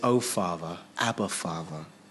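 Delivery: very low, soft, hushed, loving and tender. Speaker acting out how he speaks to his father, acting out tender speech. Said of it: "he tenderly speaks to his father".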